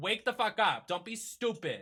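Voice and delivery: thick, laid-on, strong Boston accent. Ranting about a Dunkin Donuts delivery order, in a strong Boston accent. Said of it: "Then that sounded so Boston".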